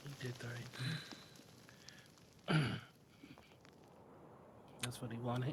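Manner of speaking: very soft mumbling to himself. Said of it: "Are you mumbling to yourself?".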